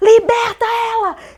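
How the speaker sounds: high, loud shouted delivery. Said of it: "ela começou a botar a mão no meu peito e dizia".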